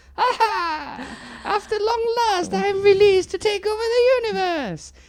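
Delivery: very bad, shrill, high villain witch voice. Discussing old Doctor Who and Power Rangers, doing a very bad Rita Repulsa impression. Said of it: "my very bad impression of Rita Repulsa".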